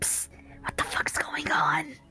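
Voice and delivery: loud, carrying stage whisper. Voicing a character who asks Tor what is going on: loud whisper. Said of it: "loud whispers to Tor".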